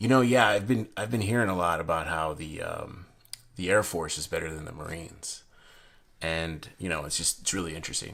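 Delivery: casual, offhand, tossed-off delivery.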